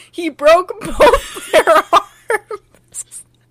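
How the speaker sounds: high, loud speech broken up by laughter. Recounting a story, laughing while talking. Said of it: "I'm not laughing".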